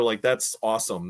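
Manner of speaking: usual speaking voice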